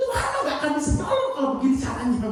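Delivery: fast, high, sharp, angry rant.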